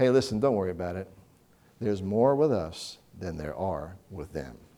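very calm, easy, soft tone. Retelling a Bible story, Elisha answering his frightened servant: retelling a very calm reply. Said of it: "Elisha says very calmly".

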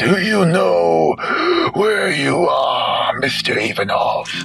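hoarse, rasping voice. Looking down at another man, he asks him a question in a hoarse voice. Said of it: "asks with a hoarse voice".

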